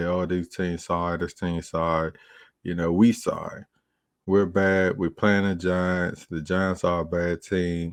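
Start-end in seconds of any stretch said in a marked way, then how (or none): none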